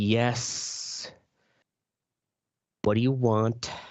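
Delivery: very slow, seething, irritated drawl. Showing how to answer a coworker passive aggressively: extra seething. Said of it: "add a little extra seething to your voice".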